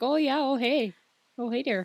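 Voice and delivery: folksy Minnesota accent. Showing how to get back into accents, doing a minnesota accent. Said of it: "like to get into Minnesota".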